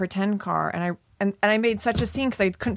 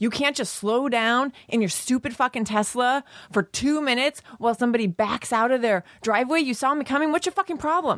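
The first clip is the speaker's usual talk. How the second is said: play-acted heated, exasperated, pitched-up angry rant; 5 semitones higher than usual. Retelling a road quarrel with another driver: retelling an angry yell. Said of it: "I'm all ready to yell".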